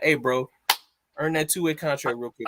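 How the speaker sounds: ordinary talk, nothing marked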